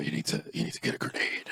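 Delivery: put-on deep scratchy voice. Show someone how the actor changes his voice, with a deep, scratchy Adrien Brody impression. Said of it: "he like deepens his voice, right, and makes it scratchy".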